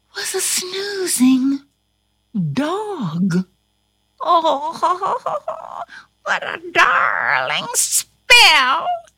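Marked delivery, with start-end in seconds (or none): 4.2-8.8 very slow, high, drawn-out, pleased witch-like crowing. Reading a story aloud, a witch admires the spell she just cast; crowed. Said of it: "she crowed".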